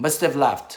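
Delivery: quick, linked-up, run-together everyday speech. Grammar lesson on 'must have', showing fast pronunciation: fast, run-together. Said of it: "빨리 발음하면".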